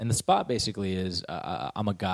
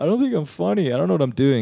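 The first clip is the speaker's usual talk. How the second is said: very loud, high, almost-crying outburst; 9 semitones higher, 9 dB louder than usual. Retelling a call to a roommate while doubting oneself: retelling being almost in tears. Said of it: "almost in tears".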